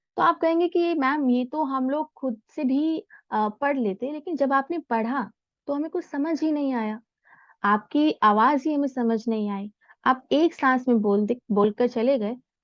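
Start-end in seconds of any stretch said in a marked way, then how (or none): none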